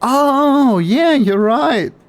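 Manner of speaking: very high, shrill, slow-stretched yell on oh. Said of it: "Sorry for screaming".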